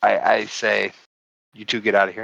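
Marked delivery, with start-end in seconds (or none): 1.5-2.2 hushed, soft, quiet, held-down voice. In character, telling two companions to leave without waking sleepers: spoken softly and quietly. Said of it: "softly, quietly, so that the people that are sleeping don't hear".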